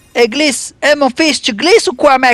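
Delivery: very high, loud cartoon donkey sidekick voice. A player narrating a game urges a piece to slide, in Donkey from Shrek voice. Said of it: "je fais la voix de l'âne de Shrek".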